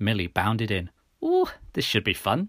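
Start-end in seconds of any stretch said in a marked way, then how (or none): 1.2-2.5 faintly mocking, pitched-up, sarcastic enthusiasm. She bounds in after the narrator says they need to talk, with a hint of sarcasm. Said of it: "with a hint of sarcasm".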